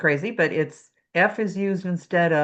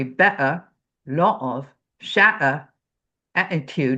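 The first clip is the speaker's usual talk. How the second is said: slow, deliberate Cockney accent with glottal-stop t's; 2 semitones lower than usual. Showing how words sound with glottal stops: cockney accent. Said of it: "Cockney dialect is gonna be".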